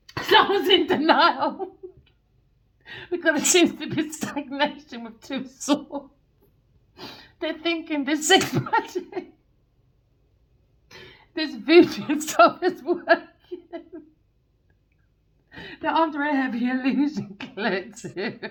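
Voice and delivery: laughing while talking. Explaining sex magic to the collective while unable to stop: laughing while talking. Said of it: "I can't stop laughing".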